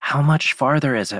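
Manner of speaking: loud, high, carrying, audible whisper. Descending with others, Dora asks a question in a loud whisper. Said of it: "in a loud whisper".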